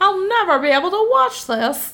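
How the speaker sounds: hyped-up, high-pitched, sensational, dramatic delivery. Describing how cheap horror movies were sold, voicing a viewer's reaction in a Target Lady voice. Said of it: "I sound like the Target lady".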